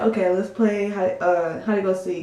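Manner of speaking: usual speaking voice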